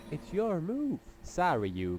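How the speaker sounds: put-on slow Brooklyn accent. Taking a turn in a card game, apologizing to the opponent: Brooklyn accent. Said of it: "Doing this Brooklyn accent".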